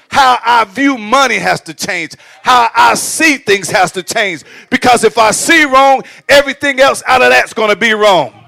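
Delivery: yelling. Addressing an audience, excited and passionate, yelling. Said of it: "Am I yelling?".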